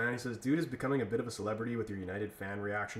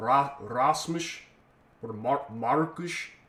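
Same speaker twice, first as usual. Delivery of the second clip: put-on Portuguese accent; 2 semitones higher than usual. Imitating how Amorim says players' names: Amorim Portuguese accent. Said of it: "with a Portuguese accent".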